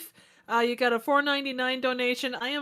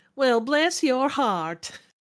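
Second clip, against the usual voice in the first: imitated Southern accent, not convincing; 4 dB louder than usual. One speaker tries a Georgia accent after the other says they can't, put-on Southern accent. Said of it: "let me".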